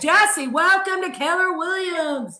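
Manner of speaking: Dallas-sounding accent. Showing Jesse, a guest from Denton, Texas, that you can do an accent, in a put-on Dallas accent. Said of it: "I can do an accent in Dallas too".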